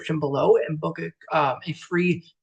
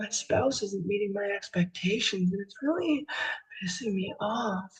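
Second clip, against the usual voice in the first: soft, sultry, seductive come-hither voice; 3 semitones higher, 7 dB quieter than usual. Presenter demonstrates how tone of voice changes feelings: sexy voice. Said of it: "this probably isn't sexy to you".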